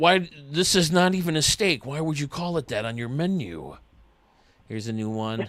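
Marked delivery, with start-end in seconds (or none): 0.0-3.8 put-on deep, raspy voice. Joking about a dish misnamed on a menu: deep raspy Ron Swanson voice. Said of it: "deep, raspy voice".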